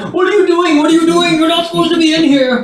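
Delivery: shrill, very high, rushed, frantic panicky outburst. Voicing a gardener who freaks out at an intruder: gardener freaking out. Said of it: "the gardener promptly freaks out and starts going".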